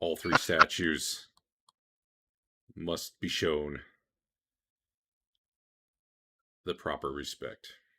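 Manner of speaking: loud, booming, resonant voice. Voicing a voice that speaks to the players: booming voice. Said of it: "a booming voice says".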